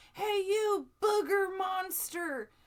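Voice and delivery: very high, very loud, drawn-out shrieking scream. Retelling what a guy in a parking lot screamed: imitating someone screaming. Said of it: "he screams at me".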